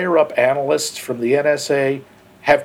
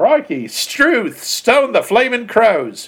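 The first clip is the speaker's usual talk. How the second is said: fake, high, hammed-up, badly done Australian accent; 8 semitones higher than usual. Riffing with a co-host, the speaker does a bad Australian impression. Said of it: "That's my flawless impression of Australia".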